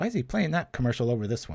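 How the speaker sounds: ordinary talk, nothing marked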